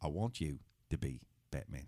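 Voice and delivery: deep, hushed, soft put-on character voice. Boasting to the others of a very good impression, show off a Michael Caine impression. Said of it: "I've got a very good Michael Caine impression".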